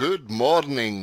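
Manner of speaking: loud, eager, enthusiastic voice. Retelling how the boss greeted the office each morning: Bill impression, enthusiastic. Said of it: "That's my best Bill impression".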